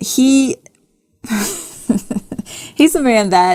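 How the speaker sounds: speaking through laughter. Told to be serious, starting to explain something, laughing while talking. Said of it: "Why are you laughing?".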